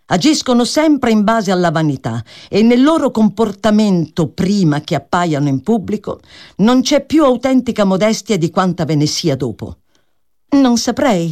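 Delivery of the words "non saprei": uncertain, faltering, hesitant, much higher pitch. Reading a character's hesitant reply to another speaker. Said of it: "rispose esitante Miss Crawford".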